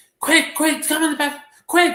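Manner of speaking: very high, loud, frantic shrill screaming. A parent mimics their son shouting while playing Fortnite: imitating high-pitched screaming. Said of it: "he's like so high pitched and so much screaming".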